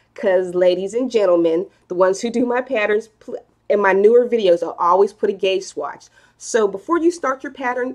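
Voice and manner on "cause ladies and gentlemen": ordinary talk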